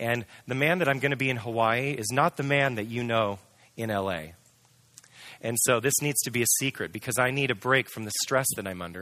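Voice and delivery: ordinary talk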